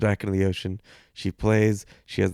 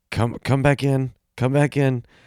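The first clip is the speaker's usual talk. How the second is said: play-acted mild, pitched-up, urgent yell; 5 semitones higher, 3 dB louder than usual. Retelling calling a wife back in from the ocean: imitating own yell. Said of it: "I yell to my wife".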